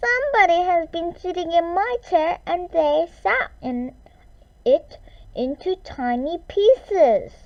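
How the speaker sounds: very high, loud, squeaky squeal of a voice. Narrator reading Baby Bear finding his chair in pieces, in a voice between squeak and squeal. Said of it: "In a voice somewhere between a squeak and a squeal".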